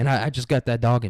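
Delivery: normal talking voice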